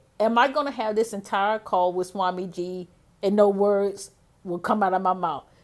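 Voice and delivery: ordinary talk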